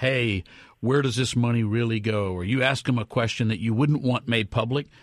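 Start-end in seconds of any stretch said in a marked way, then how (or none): none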